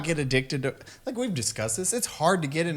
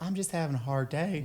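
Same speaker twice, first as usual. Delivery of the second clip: put-on small, sad monster voice, much quieter; 7 dB quieter than usual. Retelling a monster in a closet talking to him: put-on sad, small monster voice. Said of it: "you sound sad and small".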